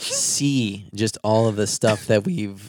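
voice cracking, breaking mid-word. Talking about looking back at old thumbnails: voice cracking. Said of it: "voice crack alarm".

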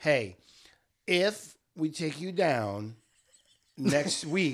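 very slow, stretched-out, slow-motion speech. Retelling what Carson says to Misha, in slow-motion speech. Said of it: "talk in slow motion like that".

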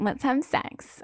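odd, silly, breathy, whispery put-on voice. Speaker acting out what she says to him, in a weird voice. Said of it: "Is with a weird voice".

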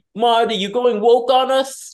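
Italian-American accent. Podcast speaker imagining addressing Martin Scorsese in a joke: offensive stereotypical Italian American accent. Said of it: "do like an offensive stereotypical Italian American accent".

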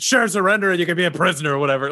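high hollering. Voicing a spellcaster telling enemies they can surrender, yelling. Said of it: "he yells".

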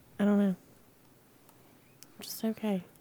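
sad, down voice. Asked why she is only doing okay, a podcast guest answers, sounding sad. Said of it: "She sounds sad".

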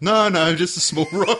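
embarrassed, insistent, high, loud, laughing outburst.

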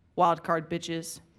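straight-faced flat delivery. Retelling a man's parting remark to him, imitating a deadpan delivery. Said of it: "he was very like deadpan".

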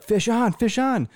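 jacked-up excited shout, very high pitched. Retelling a fishing trip, imitating Mike's excited yell. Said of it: "And he's all excited".

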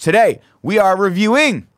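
very high, loud, grandiose orator-style proclamation. Host thanks supporters, then opens today's review: put-on oration voice. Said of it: "That's my Ario Oration voice".

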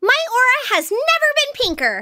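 very high, swooping, loud, thrilled voice. A voice actor shows how the character sounds: Ty Lee voice, pitched up. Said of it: "she's more pitched up".

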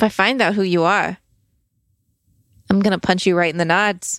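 intimidating, threatening tone. Threatening an unseen watcher, in character: intimidating threat. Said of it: "Can you roll an intimidation check?".

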